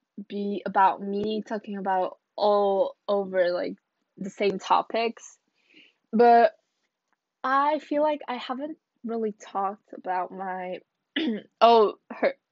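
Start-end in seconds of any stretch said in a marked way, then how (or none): 6.2-12.4 voice breaks and catches mid-phrase. Podcast host introducing today's topic, voice cracking. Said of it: "did you hear the voice crack?".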